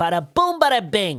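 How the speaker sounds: spoken in a New York accent. Explaining the easiest New York accent to do, Joe Pesci New York accent. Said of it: "the easiest New York accent is your Joe Pesci".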